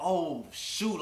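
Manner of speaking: sudden frightened, scared, startled exclamation. Retelling hiding as the father arrived: retelling own fear. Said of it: "I was scared".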